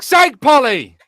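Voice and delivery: shouting. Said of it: "he'd yell it at me".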